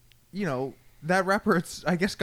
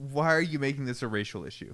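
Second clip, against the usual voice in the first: mock heated, irritated, upset, annoyed, passionate tone; 3 semitones lower than usual. Retelling what Steven said, imitating his upset, annoyed voice. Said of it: "upset, annoyed Steven voice".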